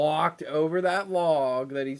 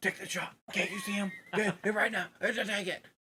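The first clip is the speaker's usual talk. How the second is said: hushed, high whisper-yell under the breath; 6 semitones higher, 7 dB quieter than usual. Retelling what the other man kept saying while he watched the shot, retelling a whisper-yell. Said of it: "he's like whisper yelling".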